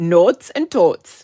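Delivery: loud, exaggerated Minnesota accent laid on thick. Presenter naming a stamp set for viewers, Minnesota accent. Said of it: "That is my Minnesota accent".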